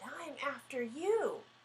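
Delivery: hissing cat voice. Reading a story aloud, the cat hisses back at the bird: hissing cat voice. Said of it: "The cat looked up at the bird and hissed".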